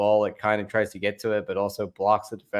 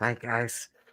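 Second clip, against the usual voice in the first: mock hushed voice, quieter; 7 dB quieter than usual. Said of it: "so quiet".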